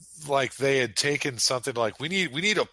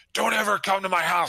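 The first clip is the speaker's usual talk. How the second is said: high-pitched, screaming outburst; 7 semitones higher, 3 dB louder than usual. Retelling what a man shouted when he came outside, imitating someone screaming. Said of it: "why are you screaming at this dude".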